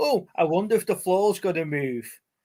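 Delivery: bad, poorly done Geordie accent. Retelling a line a girl says in a badly dubbed show, really poor geordie accent. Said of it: "in like a really poor fucking Geordie accent".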